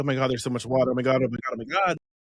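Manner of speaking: fast, flustered, overwhelmed panicky babble. Acting out how people react to too much water: mock overwhelmed panic. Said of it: "we get so overwhelmed".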